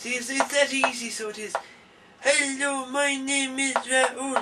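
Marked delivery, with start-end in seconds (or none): 2.2-4.4 puppet voice, higher and slower. A performer demonstrates how he makes a puppet speak and introduce itself to an audience, in a puppet voice. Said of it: "I can make him talk like this".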